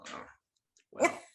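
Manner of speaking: breathy, whispered character voice. Retelling walking out of the movie theater: talking like Heath Ledger's Joker. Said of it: "talking like Heath Ledger".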